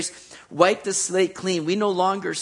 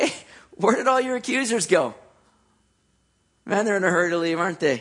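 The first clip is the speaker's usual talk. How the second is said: put-on, half-sarcastic, wry delivery. Retelling a remark about the accusers who all left: almost sarcastic. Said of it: "Almost sarcastically".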